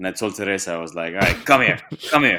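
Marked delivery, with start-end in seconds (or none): 1.1-2.4 strict, reproving voice. Retelling calling the dog over after she peed: stern scolding tone to a dog. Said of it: "with that tone".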